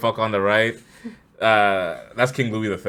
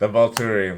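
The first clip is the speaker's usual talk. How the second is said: normal talking voice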